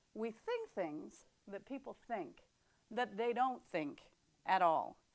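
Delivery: slow, halting, deliberate, word-by-word spelled-out pace. Repeating the saying a second time after saying it fast, said slowly. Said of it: "then I'll say it slow".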